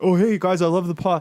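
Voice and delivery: teasing, mocking, high-pitched fan caricature voice. Podcast host mocks how the show's followers sound, in a mocking imitation of a fan. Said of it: "this is what they sound".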